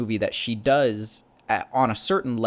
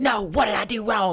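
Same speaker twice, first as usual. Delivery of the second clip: mock screamed outburst, pitched very high; 10 semitones higher than usual. Retelling a film scene where she screams at him: imitating someone screaming. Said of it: "where she's screaming at him".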